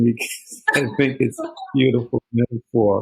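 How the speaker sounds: words coming through laughter. Responding to a guest's metaphor, laughing while talking. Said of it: "I'm sorry, I'm laughing".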